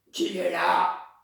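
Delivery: big, heavy, gruff wolf voice. Narrator reads the wolf in Grandmother's bed answering the knock: wolf's big voice. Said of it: "entendit la grosse voix du loup".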